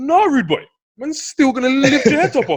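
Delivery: very high, loud voice. Retelling a scene where Travis answers an old schoolmate: Travis impression. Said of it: "let me try and do my Travis impression".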